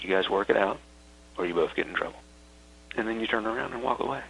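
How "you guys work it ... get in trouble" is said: soft, much quieter voice. Demonstrating what to say to two people who must sort it out, in a soft voice. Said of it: "say with a soft voice".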